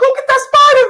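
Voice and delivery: very high, shrill put-on lady voice. Mocking another speaker's fright at a spider: imitating a lady's voice. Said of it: "you sound like a lady".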